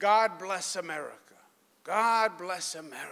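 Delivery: put-on broken Italian accent. Speaker quotes an Italian immigrant grandfather, in a broken Italian accent. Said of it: "in his broken Italian accent".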